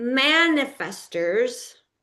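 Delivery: man leaned on hard in manifestors. Talking of women as manifestors: heavy stress on MAN in manifestors. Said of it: "I'm emphasizing that word man".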